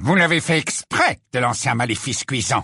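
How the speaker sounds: cold, icy, chilly. A man who just lowered his wand questions someone who has fallen, coldly. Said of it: "demanda Rogue avec froideur".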